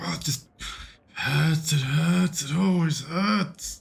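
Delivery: pained, disturbed, distressed. Role-playing a character whom others ask whether they need help, disturbed and in pain. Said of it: "you sound very disturbed".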